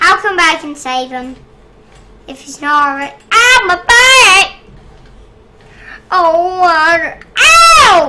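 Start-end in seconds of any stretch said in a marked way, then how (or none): 3.3-8.1 loud, very slow, drawn-out pained yelps, long "ow". Someone in pain, told they're screaming and very loud, screaming. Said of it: "You're screaming and being very loud".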